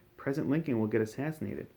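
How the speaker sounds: ordinary delivery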